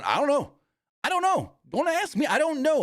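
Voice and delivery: very high, swooping voice. Retelling a scene with the announcers, imitating Corey Graves backing away from Braun. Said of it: "Corey's backing him going".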